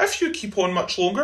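usual speaking voice

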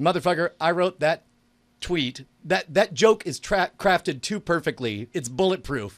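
usual speaking voice

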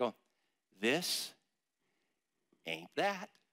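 hushed, slow, soft half-whispered words. Speaker shows listeners how to half-whisper the three words: half-whispering. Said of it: "Just whisper kind of like".

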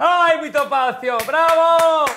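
delighted cheering, high and loud.

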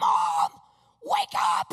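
acted, held-back, restrained urgent yelling. Retelling waking Mom after seeing handcuffs on screen: imitating own screaming. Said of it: "I start screaming".

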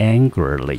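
angrily, said slow, with AN stressed.

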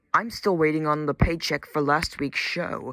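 ordinary delivery

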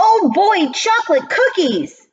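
shrill, very high-pitched, shouted outburst. Reading a story aloud, a first-grader calls out at snack time: shouting. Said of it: "Lewis shouted".

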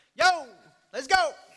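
very loud, high-pitched cabbie holler. Describing different voices calling to sheep, doing the taxi cab driver's call, imitating a taxi cab driver. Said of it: "that taxi cab driver's like".

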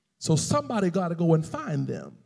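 plain

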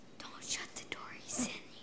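hushed whisper. Someone sent back to bed insists there's a monster in the room, whispering.

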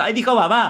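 gushing with pride. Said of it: "que dijo".

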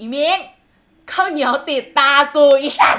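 acted-out yelling. Telling a story, quoting what someone shouted from behind a closed door: retelling a shout. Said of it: "มันก็ตะโกนออกมาว่า".

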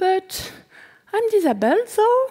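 very high, weak, feeble voice with rising pitch. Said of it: "with a questioning mark at the end and a feeble voice".

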